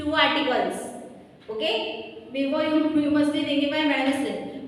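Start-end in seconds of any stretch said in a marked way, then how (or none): none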